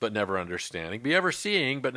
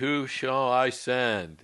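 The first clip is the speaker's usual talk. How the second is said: speech in a heavenly voice. Reading Isaiah aloud, quoting the voice of the Lord; God voice. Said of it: "It's my God voice right there".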